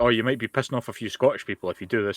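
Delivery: ordinary delivery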